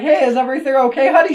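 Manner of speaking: offhand, breezy, nonchalant tone, a bit high. Retelling a movie scene, the dad walking in: imitating a nonchalant dad. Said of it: "just walks in and just nonchalantly".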